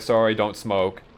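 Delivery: ordinary talk, nothing marked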